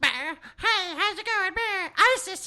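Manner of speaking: a very high, squeaky, fast, silly goofy voice. The speaker says they can't do accents but can do goofy voices, then does a goofy voice. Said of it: "I can do like goofy voices".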